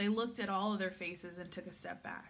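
ordinary delivery, nothing marked

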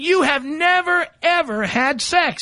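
"never ever" slowed right down, stressed, emphatic. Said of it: "listen carefully".

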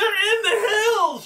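alarmed scream, crying out. A narrator voices a woman calling out from her vantage point, screaming out in alarm. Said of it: "You hear her scream out".

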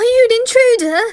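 high, loud startled shout.

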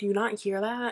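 plain

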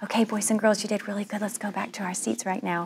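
soft, hushed half-whisper. A teacher demonstrates ending a class activity in a half-whisper voice. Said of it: "the very last one I do is the whisper voice".

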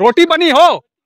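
high, loud voice calling out over distance.

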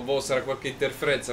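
ordinary delivery

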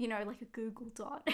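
quiet, hushed delivery.

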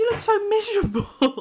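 high, swooping, cooing pet voice.

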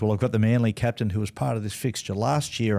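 normal talking voice

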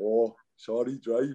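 put-on Welsh accent. Retelling what a friend said to their driver: Alex's Welsh accent. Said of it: "in his Welsh accent".

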